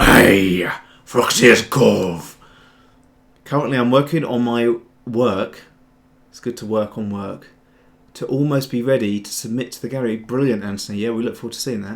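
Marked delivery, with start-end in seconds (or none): 0.0-2.4 very loud, bellowing pirate voice. Showing how Foxy talks after a rubbish first try, in Foxy's pirate voice. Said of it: "he's got like a pirate voice".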